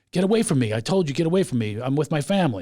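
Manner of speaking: plain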